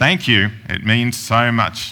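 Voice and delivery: insincere, unconvincing, not genuine tone. Trying a genuine-sounding thank-you with no smile, but it comes out insincere, not genuine. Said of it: "That didn't sound genuine at all".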